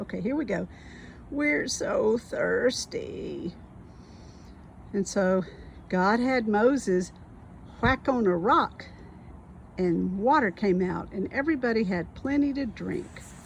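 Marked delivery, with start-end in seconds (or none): 1.3-3.5 put-on whiny complaining voice. Retelling the Moses story, the speaker voices the thirsty walkers: put-on whiny voice. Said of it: "Can you do your a whiny voice".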